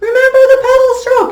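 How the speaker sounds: very high, little, nagging voice. Retelling a reminder to class members: imitating own nagging voice. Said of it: "my little nagging voice comes back to them and says".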